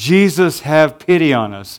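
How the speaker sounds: normal talking voice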